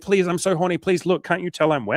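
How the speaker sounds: high, insistent, pleading, begging delivery. Retelling what she says back to him in bed: imitating her begging. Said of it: "sex begging thing".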